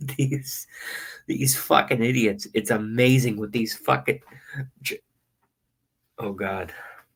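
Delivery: talking while fighting back laughter. Reacting to what these people are doing, trying to hold it in: laughing while talking. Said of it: "this is humor tears".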